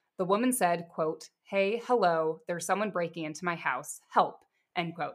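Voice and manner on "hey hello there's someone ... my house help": ordinary talk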